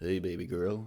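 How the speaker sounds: fake sultry, hot, deep put-on voice. Joking before starting the first round: put-on hot deep voice. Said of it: "Let me have my hot and deep voice".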